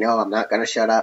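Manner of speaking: ordinary delivery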